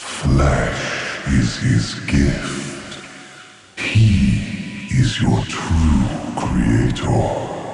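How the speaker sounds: very low, deep, eerie, spooky whisper. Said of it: "I love the whispers so much".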